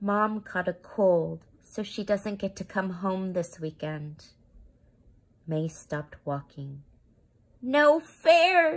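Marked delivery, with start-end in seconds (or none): 7.6-8.8 very high loud shout with "fair" stretched out. Mei, hearing Mom can't come home this weekend, stops walking and shouts. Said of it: "she shouted".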